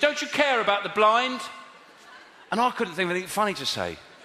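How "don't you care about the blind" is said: put-on loud, high shout of a distant man. Speaker retells a man with a clipboard shouting at them from ten yards away, retelling a shout. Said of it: "he shouted".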